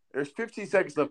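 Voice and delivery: ordinary delivery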